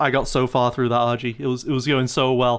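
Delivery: ordinary delivery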